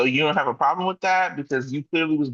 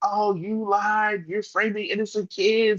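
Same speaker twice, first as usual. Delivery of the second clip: yelling, higher; 6 semitones higher than usual. Retelling a scene from the show: imitating Britt yelling. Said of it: "Britt is there yelling like".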